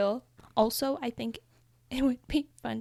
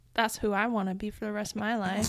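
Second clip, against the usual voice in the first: ordinary talk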